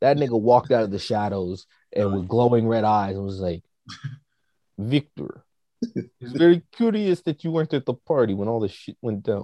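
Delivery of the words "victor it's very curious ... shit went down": put-on Eastern European vampire-style accent. Retelling a man confronting Victor, done in an Eastern European accent. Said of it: "That was my best Eastern European accent".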